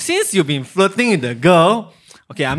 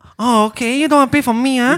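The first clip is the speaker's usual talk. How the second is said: put-on girl voice; 8 semitones higher than usual. Voicing what she's thinking when the boy won't pay for her meal, in a put-on girl voice. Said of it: "Can you use girl voice?".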